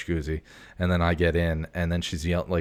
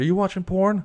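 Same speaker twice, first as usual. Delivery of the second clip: acted, put-on, very high-pitched, loud yell; 5 dB louder than usual. Retelling his partner calling out from the bathroom: imitating someone yelling. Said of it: "She yells again".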